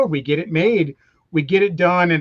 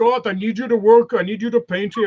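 put-on blunt, curt delivery in a German accent; 4 semitones higher than usual. Retelling how the boss asked him to work: Arnold Schwarzenegger impression. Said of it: "That's how he talked, is his big German guy".

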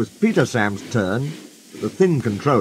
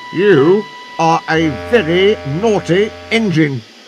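stern, raised and slow voice; 6 semitones higher, 6 dB louder than usual. Narrator voicing the thin controller speaking to the engine Sir Handel, stern. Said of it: "he said sternly".

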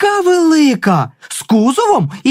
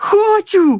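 high, happy, eager, joyful exclamation; 5 semitones higher than usual. A small child invited to a school football match answers with a joyful exclamation. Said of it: "радісно вигукнув Юрчик".

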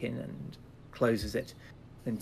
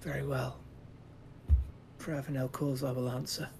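sighing the words out, much quieter; 2 semitones higher, 4 dB quieter than usual. He looks up at her after her silence and answers, on a sigh. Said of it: "lets it out in a sigh".

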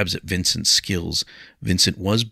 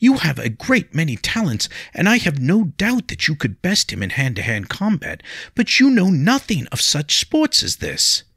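very high, exasperated, frustrated pleading tone; 10 semitones higher, 4 dB louder than usual. Narrator voices her plea to William, frustrated, angry pleading. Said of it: ""When you are finished fawning over the Lady [name]".

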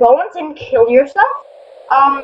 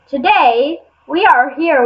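documentary narrator voiceover delivery. Opening a video and greeting viewers: documentary narrator tone. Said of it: "Why do I sound like a documentary?".

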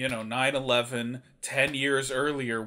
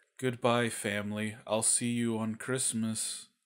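soft, flat, emotionless monotone, acted; 2 semitones lower, 5 dB quieter than usual. Describing a favorite movie character, the disappearing dad, imitating a flat emotionless voice. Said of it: "has so little emotion about fucking anything".

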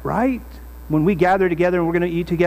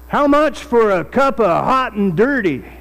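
a touch of rural country twang; 4 semitones higher, 3 dB louder than usual. Retelling what a man asked after looking at the speaker's cup: slight country twang. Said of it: "in a little bit of a country twang".

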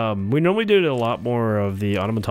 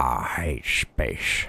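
very low voice, talking around a cigar; 9 semitones lower, 4 dB quieter than usual. Imagining someone wandering around with a cigar in their mouth: pretend talking with a cigar in mouth. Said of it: "with a frickin' stogie in your mouth being like".

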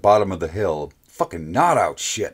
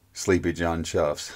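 ordinary delivery

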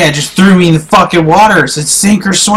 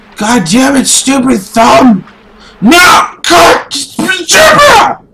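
furious raging voice, high and swooping; 7 semitones higher than usual. Losing at a hard game after a mistake, raging at the game. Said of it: "me fucking raging".

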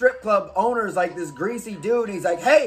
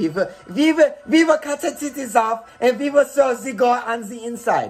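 exaggerated German accent; 2 semitones higher than usual. Imagining how they always talk: cartoon German accent. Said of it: "in this, like, Bugs Bunny German accent forever".

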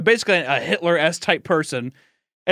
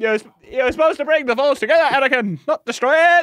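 put-on yelling, much higher pitch; 8 semitones higher, 4 dB louder than usual. Retelling a scene, acting out Obi-Wan yelling at Anakin, imitating Obi-Wan yelling. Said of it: "Just like yelling at him".

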